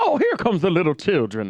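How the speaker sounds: gushing, swooping, sing-song voice. Retelling what Dark Chocolate Professor said to the kids: imitating Dark Chocolate Professor. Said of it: "remember Dark Chocolate Professor".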